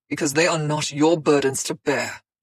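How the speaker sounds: angry snarl. Reading a tense argument aloud, a character refuses help: snarling. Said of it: "he snarled".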